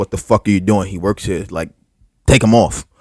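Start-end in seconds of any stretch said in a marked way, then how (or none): none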